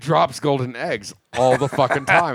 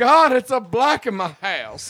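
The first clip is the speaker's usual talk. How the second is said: swooning Southern belle cry, pitched very high; 9 semitones higher than usual. Retelling how a man reacted, like a mock-fainting southern belle. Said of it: "like a Southern Belle putting her forehead".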